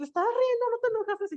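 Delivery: put-on soft, high child voice.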